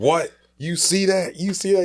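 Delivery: very high-pitched screaming yell. Retelling a night watching the game on TV outside: retelling own screaming. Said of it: "So I start screaming".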